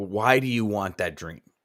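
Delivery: ordinary talk, nothing marked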